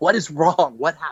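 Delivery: alarmed, startled, freaked-out panic. Retelling waking up after he kept saying it, speaker acts out past self: retelling waking in a panic. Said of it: "I woke up like freaking out".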